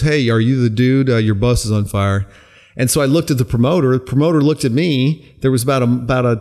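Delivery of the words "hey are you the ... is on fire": ordinary delivery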